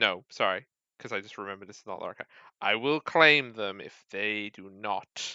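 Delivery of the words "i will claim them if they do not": very deep terrifying voice, much slower. Voicing a being that speaks through a body, very deep terrifying voice. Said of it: "You hear a very deep and terrifying voice".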